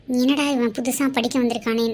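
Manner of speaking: plain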